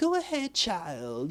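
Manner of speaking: put-on speaking softly like an old lady. Retelling a scene, doing Mary Shazam talking like a little old lady. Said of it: "she was talking kind of like a little old lady".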